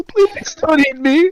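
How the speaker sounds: very high, loud sobbing and bawling. Voicing the captive pleading with a giant turtle: bawling while pleading. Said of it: "He starts, like, bawling".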